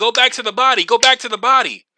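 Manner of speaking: mock, high-pitched screaming and yelling. Recalling listening to a fight at a party, yelling advice at the boxer: retelling a scream. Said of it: "I'm screaming".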